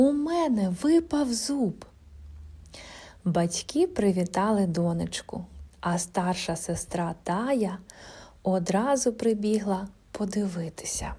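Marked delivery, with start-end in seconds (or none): 0.0-1.8 high, joyful, delighted, gleeful cry. Narrating a story, a little girl calls to her parents, exclaiming joyfully. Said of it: "радісно вигукнула вона".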